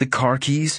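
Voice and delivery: ordinary delivery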